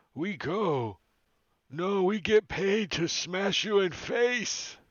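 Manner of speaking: put-on ogre voice. Voicing an ogre who stops and turns around: ogre voice speaking giant. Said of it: "he says in giant".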